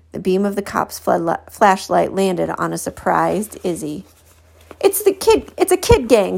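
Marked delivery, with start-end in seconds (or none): 4.8-6.4 crying out in a very high voice. Pointing out the kid to a young cop, crying out. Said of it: "Blue cried".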